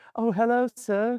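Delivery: very high British Victorian lady voice. Asked which accent they like, the speaker does Buffy's British Victorian woman voice. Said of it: "the British Victorian woman".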